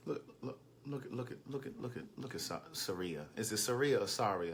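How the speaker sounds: hushed soft voice.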